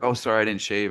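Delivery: normal talking voice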